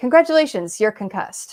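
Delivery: high, loud, dramatic delivery. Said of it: "comes back in dramatically and goes".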